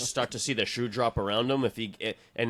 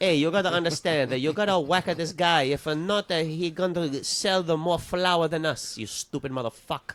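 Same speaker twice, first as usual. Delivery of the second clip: put-on Italian gangster accent, pitched up; 5 semitones higher than usual. Improvising a mob cat bit, urging Antonio to do the hit: mock Italian mobster voice. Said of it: "it's a mob cat".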